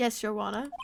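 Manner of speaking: posh put-on British accent. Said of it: "I'm getting these accents mixed up now".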